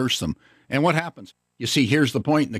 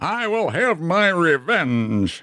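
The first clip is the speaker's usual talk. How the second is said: put-on British accent, pitched up, very slow, drawn out; 6 semitones higher than usual. Retelling a preacher's words about an enemy: imitating John Wesley's British accent. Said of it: "in his British accent".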